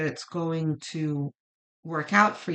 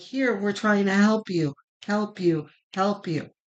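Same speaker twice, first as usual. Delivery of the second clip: put-on shouting; 4 dB louder than usual. Voicing the spirit calling out to Scorpio: imitating the spirit shouting. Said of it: "really shouting".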